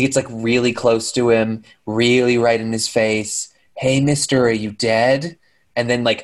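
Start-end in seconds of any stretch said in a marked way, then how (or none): none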